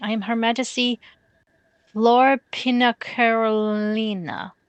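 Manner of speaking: very slow, deliberate, word by word, one word stretched. Introducing herself by her full title to Usagi, said really slowly. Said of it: "I had to say that really slowly".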